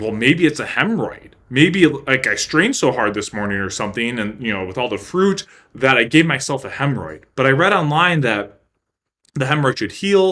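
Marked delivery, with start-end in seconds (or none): none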